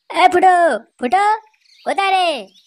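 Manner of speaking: loud shouting. Early in the morning, calling out for someone, loud shouting call. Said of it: "সকাল সকাল এত চিল্লাচ্ছিস কেন?".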